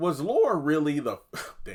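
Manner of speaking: voice suddenly cracking up high. Making a point about a show episode when the voice unexpectedly cracks. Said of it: "why did my voice do that?".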